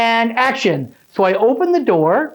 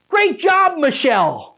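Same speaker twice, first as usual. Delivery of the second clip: pitched-up voice calling out across a distance; 5 semitones higher than usual. Retelling how the director called out after a take: imitating the director yelling. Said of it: "And the director yells".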